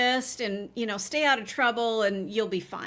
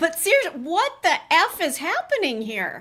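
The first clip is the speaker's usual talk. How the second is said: worked-up, heated, raised charged voice; 5 semitones higher, 5 dB louder than usual. Discussing a case, the speaker admits to getting charged up. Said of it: "getting charged up".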